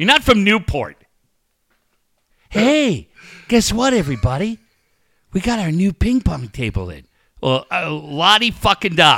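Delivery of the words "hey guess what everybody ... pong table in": put-on thin voice lacking bass. Speaker mocks an announcement to everybody, mocking voice with no bass. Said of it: "get a little bass in your voice".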